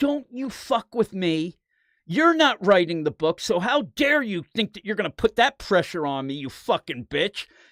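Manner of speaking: furious, heated, unhinged rant, losing control. Retelling how a woman suddenly lost her mind at someone; retelling a furious yell. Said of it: "lost her mind and started yelling".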